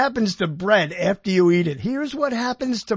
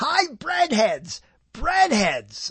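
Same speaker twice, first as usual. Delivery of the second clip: much higher cartoon bunny voice; 4 semitones higher than usual. Voice actor showing the voice he does in the commercials, in the Bunny Bread bunny voice. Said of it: "Listen to this voice to this guy, the bunny".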